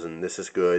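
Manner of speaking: plainly approving voice. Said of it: "sometimes I talk about different blade steels".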